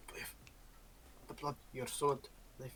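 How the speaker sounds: very quiet, hushed whisper, barely there. Acting in a game, warning another character through the Vox: whispering. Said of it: "I just whisper through the Vox".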